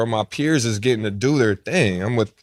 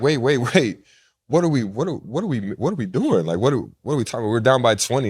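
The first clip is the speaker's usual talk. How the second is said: plain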